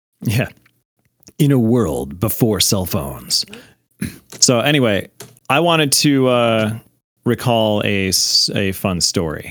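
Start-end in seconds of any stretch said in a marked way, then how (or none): 1.4-3.4 movie trailer announcer voice, faster. Asked by another speaker to say it in a movie voice, using a movie trailer voice. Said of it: "Do it in a movie voice".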